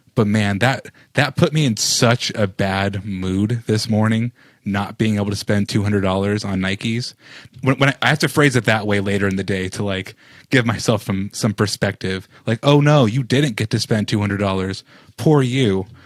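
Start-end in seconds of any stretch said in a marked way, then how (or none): 12.7-15.9 mock insincere, pitying, sarcastic sympathy. Retelling own words to self about missing shoes: mock sarcastic pity. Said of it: "All sarcasm there".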